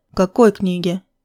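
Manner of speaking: ordinary delivery, nothing marked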